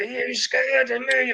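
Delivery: mock, menacing, very high-pitched delivery. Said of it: "Like that, clenching his muscles".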